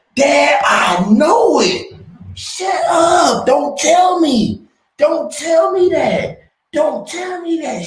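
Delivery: put-on very high, loud, childish tantrum shriek. A father retelling how his daughter reacts when he explains things, imitating a child's fit. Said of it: "she has a fit".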